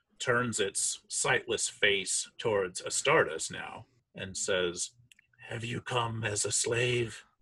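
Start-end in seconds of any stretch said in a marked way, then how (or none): 5.5-7.2 hollow, sepulchral, echoing voice. Narrating a corpse that turns to question an adventurer, in an echoing sepulchral voice. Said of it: "that this kind of weird echoing sepulcher voice echoes out of the mouth".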